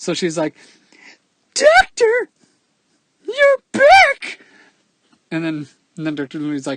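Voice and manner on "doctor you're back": terrible voice, very high, shrill and very loud. Voicing a nurse greeting a doctor in the game, terrible nurse voice. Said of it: "she just has a terrible voice for no reason".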